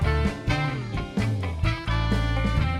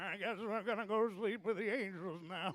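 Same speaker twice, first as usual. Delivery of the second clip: put-on old man voice, much higher and quieter; 10 semitones higher, 15 dB quieter than usual. Asked to say it in Peepaw's voice, the speaker repeats the line in Peepaw's voice. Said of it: "Peepaw's voice".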